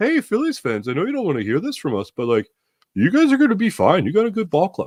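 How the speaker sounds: put-on lightly done, sing-song, almost Canadian-sounding accent. Voicing Diamondbacks fans' comments to Phillies fans, in a Canadian-sounding accent. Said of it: "I almost make them sound Canadian".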